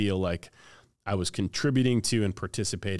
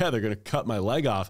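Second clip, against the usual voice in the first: tearful voice, words spoken through tears; 3 semitones higher than usual. Retelling answering a surgeon before an amputation: imitating own past crying. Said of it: "I'm, like, crying".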